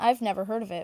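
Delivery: ordinary delivery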